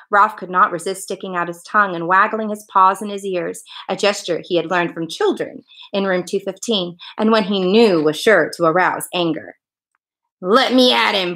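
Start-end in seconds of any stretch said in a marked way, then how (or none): 10.4-11.3 barked, little terrier voice. Reading a story where a little terrier barks at a man: barked. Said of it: "barked the little terrier".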